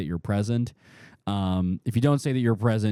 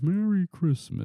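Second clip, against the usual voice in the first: bewildered, confused, pitched-up voice; 9 semitones higher than usual. Game master voices a character muttering to himself, quiet confused muttering. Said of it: "like just like quietly to himself, confused".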